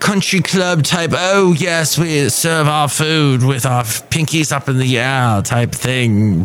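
snooty, hoity-toity, upper-crust posh affectation. Describing what a yacht club is not like, in a hoity-toity voice. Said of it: "that's my hoity-toity voice".

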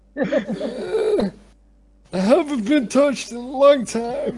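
orgasmic-sounding tree voice. Voicing a tree that has just been touched: orgasmic tree voice. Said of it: "Did the tree just fucking orgasm?".

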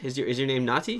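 plain

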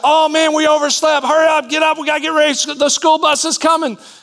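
acted, very high-pitched, rousing hollered shout. Retelling waking a sleeping friend in the middle of the night, retelling a holler. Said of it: "holler and shout".

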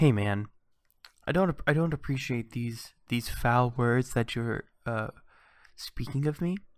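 put-on menacing, threatening tone. Imitating a listener who emails about being insulted: mock threatening. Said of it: "He's like".

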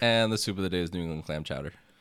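very fast, loud, rushed, run-together delivery. Podcast host announcing the soup of the day, said really fast. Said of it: "You said it really fast".

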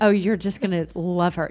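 ordinary talk

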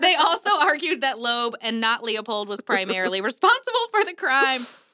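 giggling, unable to hold back laughter. Telling the story of a murder case, can't stop laughing. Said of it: "and I can't stop laughing".

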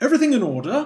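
loud, high-pitched, put-on, very posh British accent. Imitating a guardsman who acts as a butler, in a posh accent. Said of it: "he's got this very posh accent".

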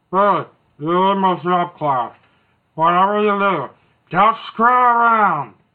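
hangdog, droopy, muffled voice with lots of air. Recalling a shop teacher's words to a student, the speaker imitates Mr. Adler. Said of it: "he sounds a little bit like Droopy the dog. But it's more air".

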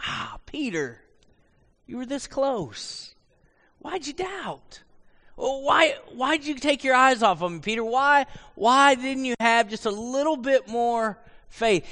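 mock compassionate, sorrowing tenderness. Voicing god's words to peter: sorrowful, compassionate voice. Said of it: "I think it's sorrow".

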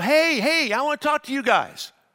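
loud, stretched-out yelling. Retelling how a neighbor lady called out the window: imitating someone yelling. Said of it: "the lady yelled out the window".

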